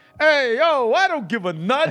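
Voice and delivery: high, put-on New Yorker voice, New York accent. Trying out a line in different accents, starting with a New York accent. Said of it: "Because that's like New York".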